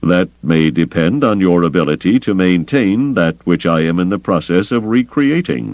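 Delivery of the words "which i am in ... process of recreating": ordinary delivery, nothing marked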